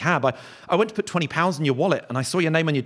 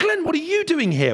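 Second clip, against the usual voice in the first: mock very high, delighted, eager, gushing enthusiasm; 12 semitones higher than usual. Retelling a girl he knew greeting him at the Edinburgh Fringe: mock-enthusiastic greeting. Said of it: "she really enthusiastically went".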